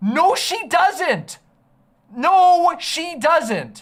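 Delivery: heated, angry insistence. Ranting about an argument they find absurd; angry. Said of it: "I'm getting so mad".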